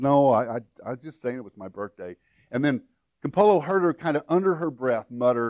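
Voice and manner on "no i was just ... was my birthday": mock-embarrassed, sheepish tone. Retelling a woman's reply to a sharp retort about her birthday, imitating an embarrassed reply. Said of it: "bowing her head down a little embarrassed".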